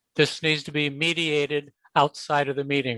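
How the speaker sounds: ordinary delivery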